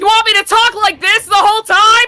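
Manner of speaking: very loud, high, booming, blasting delivery. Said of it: "I can't turn you down for myself".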